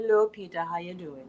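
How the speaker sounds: low, seductive, sexy voice. Imitating the aunt's voice, the world's sexiest voice, greeting Peter. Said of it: "She has the world's sexiest voice".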